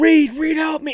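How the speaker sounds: put-on very high, shrieked scream. Retelling a film scene where a trapped character calls for help: imitating Ben Grimm screaming.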